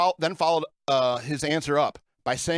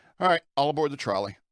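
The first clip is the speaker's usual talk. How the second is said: usual speaking voice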